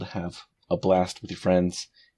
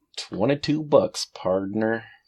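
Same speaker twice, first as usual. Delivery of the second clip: put-on American accent, much higher pitch; 3 semitones higher than usual. Asked to say the price again with an american accent. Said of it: "can you say that with an American accent?".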